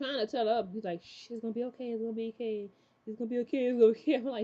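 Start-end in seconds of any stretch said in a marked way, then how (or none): 1.0-4.1 mock eerie, creepy, soothing, comforting voice. Retelling a scene where Andy shushes Abby: Andy's creepy soothing voice. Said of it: "you sound so creepy right now".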